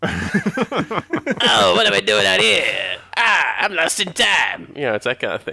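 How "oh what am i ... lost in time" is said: slow, high drawl with big swooping pitch. Joking about a great impression for the whole family: Wolfman Jack voice. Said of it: "Wolfman Jack impression".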